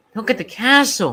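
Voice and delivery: eager little excited peep, high and loud. Arriving somewhere he has never worked before, a newcomer speaks up, peeped excitedly. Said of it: "peeped Percy excitedly".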